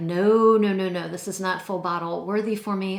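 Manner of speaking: ordinary talk, nothing marked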